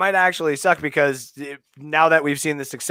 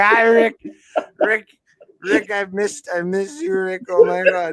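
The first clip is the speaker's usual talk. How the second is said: put-on drunken rambling speech, higher; 5 semitones higher than usual. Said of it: "I'm very drunk".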